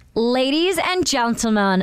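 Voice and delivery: put-on slow, careful American accent. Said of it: "do your best American accent".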